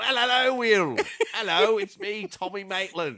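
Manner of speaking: loud, drawn-out, swooping put-on voice. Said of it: "I don't remember what Tommy Maitland sounds like".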